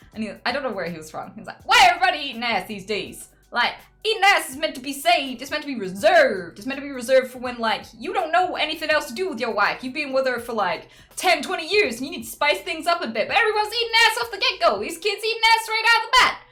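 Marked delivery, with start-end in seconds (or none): 1.6-16.3 loud, high put-on American accent, holding forth. Retelling what a man said to them, the speaker uses an American accent. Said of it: "I think it's an American accent".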